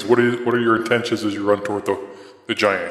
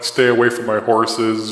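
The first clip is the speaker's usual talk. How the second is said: ordinary delivery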